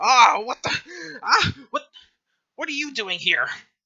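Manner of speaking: very high, very loud, shrill tiny-creature outburst. Voicing a little halfling who just ran into a player: little halfling voice. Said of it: "this little halfling is like".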